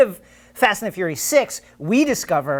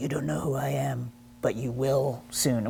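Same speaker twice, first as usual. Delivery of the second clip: low, rough, creaky voice; 5 semitones lower, 11 dB quieter than usual. Retelling a movie villain's phone threat: Jason Statham impression. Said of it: "that's a good impression".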